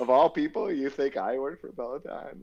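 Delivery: talking through laughter. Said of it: "I was, like, laughing".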